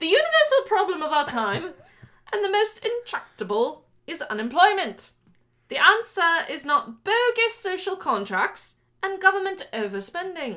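put-on British accent, pitched high. Reading a quote aloud as another speaker asked, in a british accent. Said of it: "You have to read it in a British accent".

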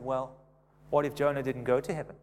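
put-on smug, knowing, condescending voice. Retelling a joke, quoting the teacher's reply: imitating a smug teacher. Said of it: "the teacher smugly said".

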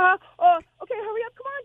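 high, hurried, rattled-off, nervous, flustered voice.

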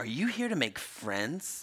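quiet voice dripping with disgust. Quoting one woman in a reality tv clip speaking to another, imitating disgust. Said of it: "one woman says to another in disgust".

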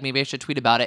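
ordinary talk

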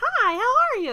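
eerie, very high, cat-like creepy voice. Demonstrating a second kind of voice, in a creepy kitty-like voice. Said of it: "a creepy like kitty kind of voice".

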